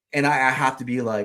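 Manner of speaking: ordinary talk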